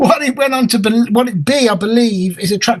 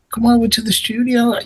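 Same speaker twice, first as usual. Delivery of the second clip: put-on Manchester accent, higher pitch; 3 semitones higher than usual. Retelling an invitation to the studio, Paul Schroeder's Manchester accent. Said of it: "he had a habit of speaking in a Manchester accent".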